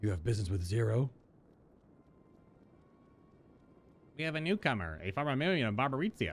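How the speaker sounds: voice of a mischievous imp creature. Speaker voicing an imp character in a scene, in an imp voice. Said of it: "My imp voice, do you, do you like it?".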